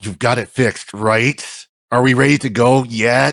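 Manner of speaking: put-on mutter under the breath. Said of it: "under his breath".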